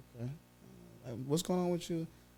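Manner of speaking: very quiet, hushed, worried and concerned tone. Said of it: "I can hear the tone of the concern".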